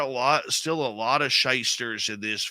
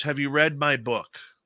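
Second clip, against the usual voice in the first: put-on English-accented voice; 2 semitones higher than usual. Retelling a guest's question on a call before the show, in a deep english accent. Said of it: "really deep English accent".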